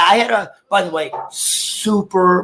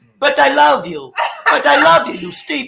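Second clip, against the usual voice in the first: put-on raised-pitch Russian-accented voice; 6 semitones higher than usual. Doing the voice of a Russian ex-girlfriend when asked: imitating Lorena, Russian ex-girlfriend. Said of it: "Do her voice".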